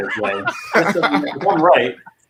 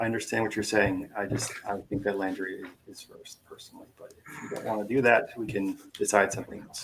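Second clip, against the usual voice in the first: very quiet, parental dad voice; 4 semitones lower, 11 dB quieter than usual. Disagreeing about an answer and offering to decide something else: quiet dad voice. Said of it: "Dan's talking in his, like, quiet dad voice".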